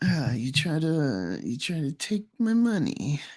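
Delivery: high, slow, wheezing character voice. Showing a friend how to do the voice without changing your face: wheezy voice.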